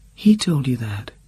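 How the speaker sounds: small, trembling, shivering, high little voice. A woman answers what the narrator just told her, in a small, shivering voice. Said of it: "she said in a small, shivering voice".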